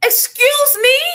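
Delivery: high, loud, mock-indignant "excuse me".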